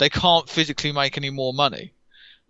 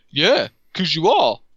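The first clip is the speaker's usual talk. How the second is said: heavy, dripping, openly mocking super-sarcastic tone; 3 semitones higher, 4 dB louder than usual. Retelling company people on stage answering fans: mimicking super-sarcastic reply. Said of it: "and just like being super sarcastic".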